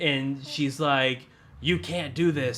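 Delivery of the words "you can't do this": put-on robotic voice. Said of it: "robot voice of, like, who Sally is".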